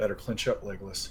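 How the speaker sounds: soft, private mutter under the breath. Voicing a character's remark during another player's check: said under his breath. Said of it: "under his breath".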